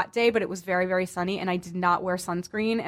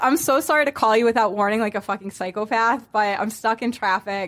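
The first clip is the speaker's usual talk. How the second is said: ordinary talk, nothing marked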